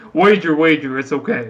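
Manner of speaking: same low, dropped character voice. Speaking in character, calming a startled companion: low voice. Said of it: "in the same kinda, like, low voice".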